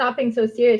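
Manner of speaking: normal talking voice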